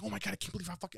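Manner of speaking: hushed, mock frantic, genuinely panicking blurt. Retelling a woman's reaction in front of her husband, imitating her panicking. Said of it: "she's like legit panicking".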